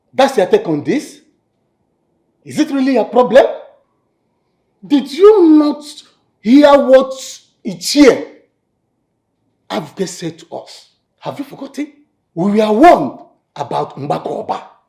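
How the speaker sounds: furious, high-pitched, angry yelling. Arguing with a council elder over a warning, yelling. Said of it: "Is that why you are yelling at me?".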